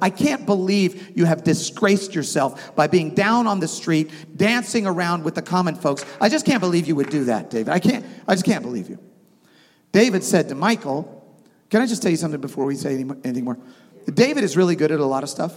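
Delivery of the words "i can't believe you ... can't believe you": plain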